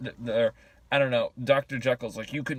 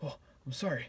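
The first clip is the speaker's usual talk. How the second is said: put-on stuttering, grunting voice, quieter; 9 dB quieter than usual. Retelling a movie scene where a character stutters and grunts: imitating stuttering grunting plea. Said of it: "he's stuttering, and he's all, ... grunting".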